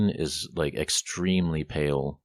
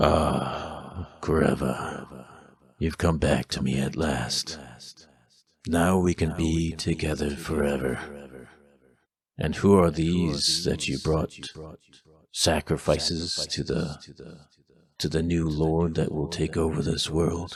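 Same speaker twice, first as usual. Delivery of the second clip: warped, distorted voice. Voicing a hooded robed figure greeting a returned companion: distorted voice. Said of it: "almost like a distorted voice".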